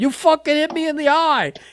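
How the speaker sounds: put-on high-pitched voice in a Boston accent. Retelling a locker-room argument after an eye injury: Kevin Sullivan's Boston accent. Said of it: "with that Boston accent".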